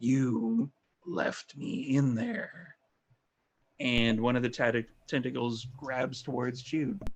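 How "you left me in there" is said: very slow, drawn-out, gravelly, resonant voice. A tentacled creature turns toward Jude and speaks in Brick's voice, gravelly, supernatural. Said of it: "gravelly and kind of like a supernatural resonance".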